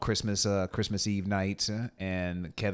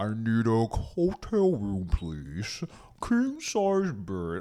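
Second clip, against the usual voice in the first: weird, modified, voice-changed disguised voice; 2 semitones higher, 3 dB louder than usual. Imitating a man who records himself but modifies the voice, imitating a modified recorded voice. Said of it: "he records himself but he modifies the voice".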